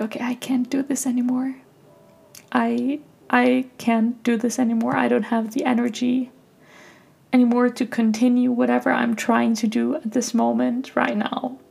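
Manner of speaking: teary voice, on the verge of crying. Recalling a day they cried for hours, speaking in a teary voice. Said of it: "I'm getting teary right now".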